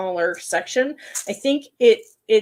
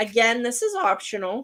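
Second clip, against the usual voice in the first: breaking, cracking voice mid-phrase; 3 semitones higher than usual. Explaining an optional craft step to viewers, the host's voice cracks. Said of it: "Oh, my voice cracked".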